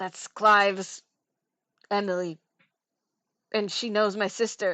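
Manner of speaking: secretive, hushed half-whisper. As Sakura, telling Pippa who Emily is, in a half-whisper. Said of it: "she's gonna whisper to Pippa and be like".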